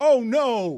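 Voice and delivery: high, loud, sudden involuntary outburst. Retelling a colleague's reaction to his wife on television: imitating Greg Cody blurting. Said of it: "he blurted like this".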